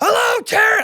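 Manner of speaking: very high-pitched, shouted yelling. A caller, apologizing for being loud, demonstrates a greeting, yelling. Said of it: "I don't know why I'm yelling".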